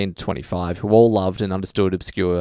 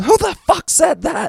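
mock very high, furious, lost-it screaming; 5 dB louder than usual. Retelling the head sergeant's reaction to a heckle, retelling a scream. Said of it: "just screamed".

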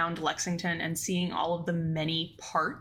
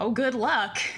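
put-on, pitched-up, lightly sarcastic wry tone; 5 semitones higher, 5 dB louder than usual. Retelling what people tell new equine vets, imitating a sarcastic tone. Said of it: "kind of in that little bit of a sarcastic kind of tone".

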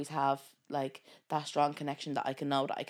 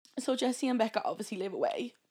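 really crying, tearful voice pitched up; 8 semitones higher than usual. Sharing what she is grateful for about her friends: really crying. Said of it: "she's really crying".

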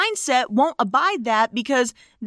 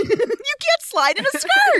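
high-pitched, slow, mock-outraged protesting voice. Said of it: "someone yells".

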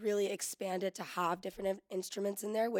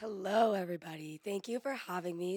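raspy, hoarse, scratchy voice. A guest greets the audience after the host asks, with a raspy voice. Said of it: "Sorry my voice sounds like".

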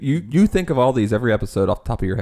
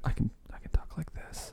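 very quiet, breathy whispered hush close to the mic; 3 semitones higher, 14 dB quieter than usual. Showing how quietly one can talk into the mic: talking quietly into the mic. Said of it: "talking, like, quietly into the mic".

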